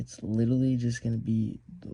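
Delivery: normal talking voice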